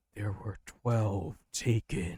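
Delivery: slow, mysterious, otherworldly disembodied voice from above. Narrating for a player who suddenly hears a voice: mysterious voice from a god.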